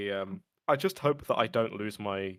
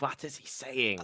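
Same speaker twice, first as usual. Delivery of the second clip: put-on movie-star grandma voice, quieter; 4 semitones higher, 3 dB quieter than usual. Act out how she would squint at you and speak, like Arnold Schwarzenegger as a grandma. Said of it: "she would genuinely sound like that... like if Arnold like Schwarzenegger was a like a, a grandma".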